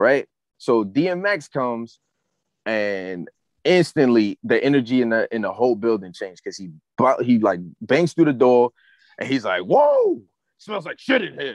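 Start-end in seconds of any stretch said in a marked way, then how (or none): 9.6-11.6 scream, pitched much higher. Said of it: "like screaming at the top of his lungs".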